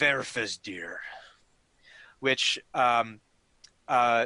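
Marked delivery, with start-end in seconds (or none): 0.0-1.0 deep, low, reined-in rumbling voice. At the edge of the scene, a giant speaks in a deep, booming, thunderous voice. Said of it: "in this very deep, booming, thunderous voice".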